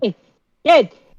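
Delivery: loud, high-pitched yelling. Narrating a young man walking up to a boy with his arm raised, shouting. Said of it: "he's like shouting".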